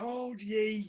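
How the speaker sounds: loud, high-pitched dwarf voice shout. A narrator voices the nearest dwarf as the party moves forward: dwarf shouting out. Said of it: "the nearest dwarf kind of shout out and go".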